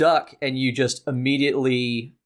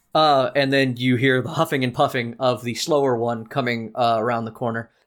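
ordinary talk, nothing marked

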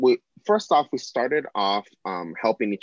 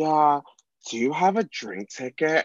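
mock drunk speech, higher; 6 semitones higher than usual. Retelling first meeting someone while hosting: imitating a drunk person. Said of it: "she's fully plastered".

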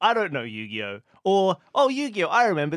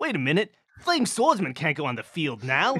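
put-on clueless voice. Mocking how clueless a top duelist is: Joey Wheeler impression. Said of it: "he's still just like".

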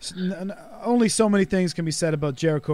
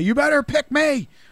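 put-on scream, higher and louder; 10 semitones higher, 5 dB louder than usual. Retelling what a wrestler yelled at the general managers: imitating someone screaming. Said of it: "he's screaming at them to say".

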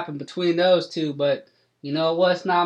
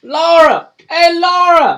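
put-on character yelling, higher and louder; 13 semitones higher, 12 dB louder than usual. Voicing Cletus Ray calling out for Laura: character screaming. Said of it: "Cletus Ray screaming".

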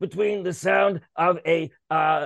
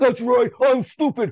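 loud, sneering, mocking put-on caricature voice; 4 semitones higher, 5 dB louder than usual. Imitating people who embrace ignorance, in a mocking put-on voice. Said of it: "that makeup voice I just did about them".

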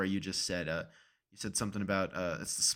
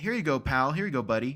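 put-on condescension, higher, louder; 5 semitones higher, 6 dB louder than usual. Retelling how restaurant workers hand over food, the speaker imitates a condescending tone. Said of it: "feels so condescending".

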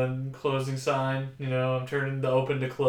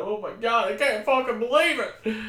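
mock weepy, teared-up, very high voice; 9 semitones higher, 3 dB louder than usual. Imitating how everyone reacts: imitating teared-up listeners. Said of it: "everyone's, like, you know, teared up".

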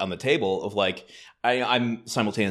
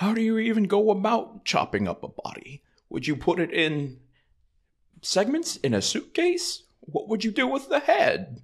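very high, slow, swooping voice, stretched out; 13 semitones higher than usual. Answering in a Jimmy Stewart contest with a Rear Window line: Jimmy Stewart impression. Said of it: "I went Rear Window with it".

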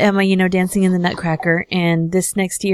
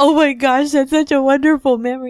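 high, weepy, sobbing, sentimental tearful crying voice; 7 semitones higher than usual. Retelling what he said at the dinner table: imitating someone crying. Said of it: "And he starts crying".

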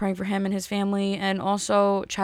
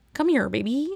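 felt frog puppet character voice; 4 semitones higher than usual. Podcast host, chatting about material for the pod, does a Kermit the Frog voice. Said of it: "That's Kermit".

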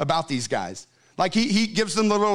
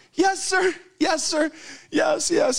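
mock crying, very high pitched and drawn out; 10 semitones higher than usual. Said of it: "And she's crying".

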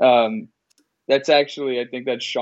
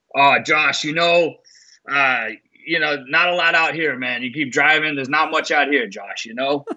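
put-on New Hampshire accent, higher pitch; 3 semitones higher than usual. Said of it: "like, New Hampshire accent".

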